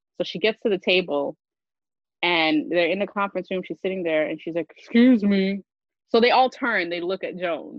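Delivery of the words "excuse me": raised, assertive, commanding voice. Retelling a partner speaking up at a conference table: imitating Joan's deeper bass voice. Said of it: "I'm gonna put more bass in my voice".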